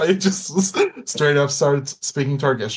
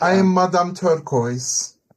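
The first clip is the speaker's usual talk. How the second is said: fake Turkish accent drifting into Russian sound; 3 semitones higher than usual. Introducing a character, Madame Turquoise, who runs a bathhouse: put-on Turkish accent sounding Russian. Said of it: "why is the Turkish accent a Russian accent".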